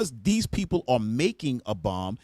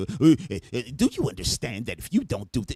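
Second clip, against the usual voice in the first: stammering, pushy, pressing tone, stumbling over uh. Mocking how an interviewer talks to a leader: imitating Stephanopoulos. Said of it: "They don't talk like Stephanopoulos right there".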